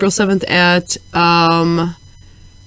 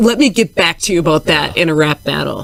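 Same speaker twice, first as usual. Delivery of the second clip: usual speaking voice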